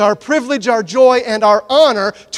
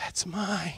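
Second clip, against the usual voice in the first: little eerie whisper, barely audible, very quiet; 5 semitones lower, 20 dB quieter than usual. A speaker acting out someone refusing to give what God asks, in a creepy whisper. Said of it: "Do a little creepy whisper right there".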